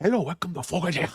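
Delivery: terrible fake Cuban accent, very high. Mocking someone's put-on greeting, in a bad fake Scarface accent. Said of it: "What is that accent? Sound like ... the accent in Scarface".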